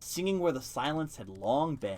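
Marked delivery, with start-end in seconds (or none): none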